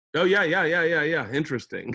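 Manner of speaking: play-acted distracted, half-listening, absent agreeing. Speaker does an impression of their former therapist: imitating a distracted therapist. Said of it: "this was my impression of my therapist".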